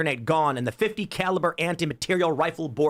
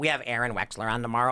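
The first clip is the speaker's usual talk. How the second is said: put-on level voice, pitched lower; 5 semitones lower, 4 dB quieter than usual. Retelling what a coworker said about tomorrow's guest: imitating Sean. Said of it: "I love your Sean impression".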